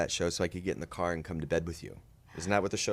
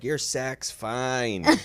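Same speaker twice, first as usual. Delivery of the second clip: put-on mean voice, higher pitch; 6 semitones higher, 4 dB louder than usual. Retelling a line to a complaining boy: retelling a jerk coach role. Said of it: "I had to play this total Coach Derek Bag".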